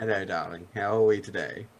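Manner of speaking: sly, knowing put-on character voice. Showing the phrase used to slip into the character Damon: sly character voice. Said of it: "that's literally my phrase into it".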